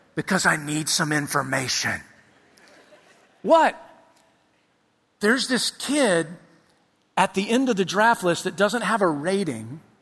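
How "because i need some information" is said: low, hushed half-whisper, voice dropped right down. A dad retells phoning his ten-year-old from the draft room, retelling a half-whisper. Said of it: "why are you whispering?".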